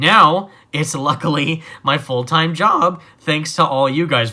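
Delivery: voice cracking and breaking with emotion. Creator thanks viewers for making this a full-time job: voice cracking with emotion. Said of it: "Voice crack there".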